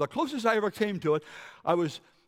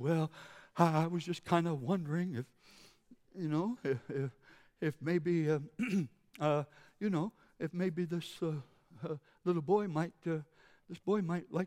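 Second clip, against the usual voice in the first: put-on meekness, much quieter; 6 dB quieter than usual. Retelling his reply to a lady who had scared him, acting meek and mild. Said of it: "I became so meek and mild".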